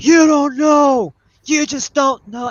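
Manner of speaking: very high, all-out acted screaming rant. Retelling a stranger screaming from across the street: imitating a man screaming. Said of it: "And he's screaming".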